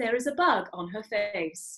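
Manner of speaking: newscaster-style reading, flat and without emotion. Imitating a charity ad's audio description: imitating a flat news voice. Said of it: "that's to say in that voice".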